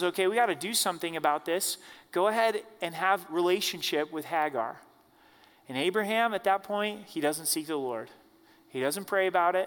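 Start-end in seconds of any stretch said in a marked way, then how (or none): none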